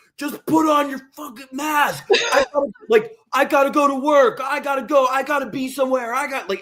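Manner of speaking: acted, very high-pitched furious yelling. Speaker recounts everyone on a plane yelling at them, imitating screaming passengers. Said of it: "Everybody on the plane was screaming at me".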